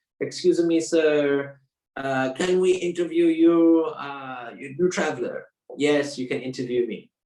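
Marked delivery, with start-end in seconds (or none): 0.2-5.5 put-on Japanese accent, broken English, drawn out. Retelling how an interviewer walked straight up to him, fake Japanese accent. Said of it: "I'm trying to do like a fake Japanese accent".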